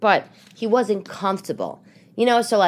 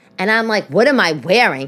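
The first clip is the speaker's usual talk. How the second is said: normal talking voice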